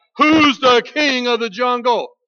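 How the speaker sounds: loud, roaring bellow. Reading a fable, the narrator voices the lion questioning a turtle, bellowing out. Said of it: "the lion bellowed out".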